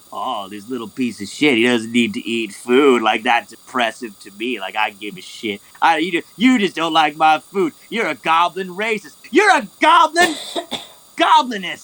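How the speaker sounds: swooping goblin voice, grumbling under his breath. Storyteller voicing the Goblin reacting to Sakura, goblin talking to himself. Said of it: "And the Goblin says to himself".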